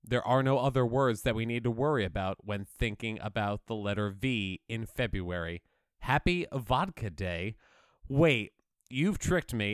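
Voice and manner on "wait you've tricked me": anguished, crying voice full of anguish. Describing a card, the speaker suddenly realizes they've been tricked: anguished. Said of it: "the anguish in my voice when I said you tricked me".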